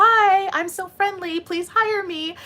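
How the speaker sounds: very high, fake-friendly, put-on nice corporate voice. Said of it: "put on our nice corporate voice".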